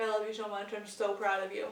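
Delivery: normal talking voice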